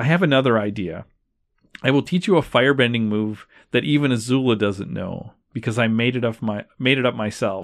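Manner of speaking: ordinary talk, nothing marked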